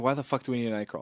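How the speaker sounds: quiet, fast, exasperated muttering. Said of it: "I'm like".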